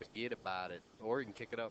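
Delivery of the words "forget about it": put-on New York accent, slower. Remarking on a player's easy safety shot, in a new york accent. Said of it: "You don't do a New York accent, do you?".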